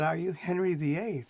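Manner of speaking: ordinary delivery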